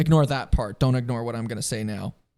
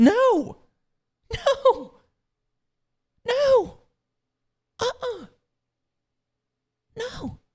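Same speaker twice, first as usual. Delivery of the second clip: voice shooting up to very high pitch; 3 dB louder than usual. Asking himself whether he thinks he's invincible, then answering in a high-pitched voice. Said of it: "My voice got really high pitched there".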